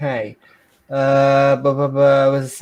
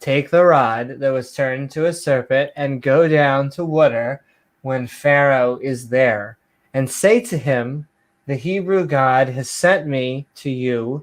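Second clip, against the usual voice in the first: ordinary talk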